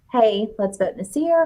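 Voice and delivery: hushed half-whispered stage whisper. Retelling what happened on the show: imitating someone half-whispering. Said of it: "she whispers to Tiffany".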